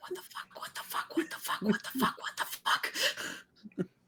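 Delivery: hushed whispered mutter under the breath, repeated. Voicing a character pacing around his tent praying: muttering under his breath. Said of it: "Under his breath".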